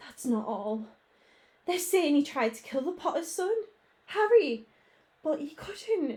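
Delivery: unsteady, wavering, trembling, quavering voice. Narrator reads a professor's line in a story: trembling voice. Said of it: "Professor McGonagall's voice trembled".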